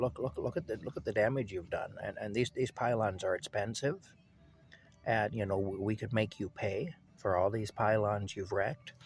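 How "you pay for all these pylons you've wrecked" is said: ordinary talk, nothing marked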